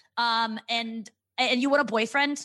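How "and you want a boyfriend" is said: usual speaking voice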